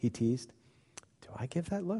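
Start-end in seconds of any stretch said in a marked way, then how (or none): 1.2-2.0 timid, sheepish, very high and soft little voice. [name] asks Sammy after being teased, rather sheepish. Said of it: "[name] asked rather sheepishly".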